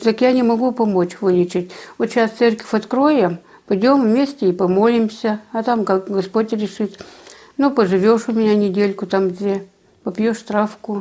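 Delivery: plain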